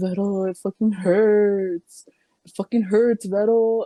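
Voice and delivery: mock drunken sobbing. Retelling how he'd come home drunk after a tattoo, imitating drunk crying. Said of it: "he'd be like crying".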